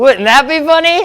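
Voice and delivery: said while laughing. Retelling the speaker's own reply in a conversation, laughing. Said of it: "(ha ha)".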